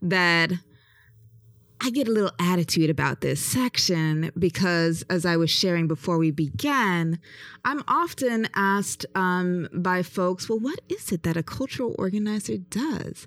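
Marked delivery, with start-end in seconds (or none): 10.5-13.3 mock patronizing, put-on condescending tone. Imitating the folks who often ask the speaker this, in a mock-patronizing tone. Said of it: "said in a very patronizing voice".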